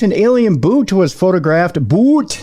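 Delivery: Minnesota vowels, put on for show. Reading a space news story to a co-host, in a Minnesota accent. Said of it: "I used my Minnesota accent for you there".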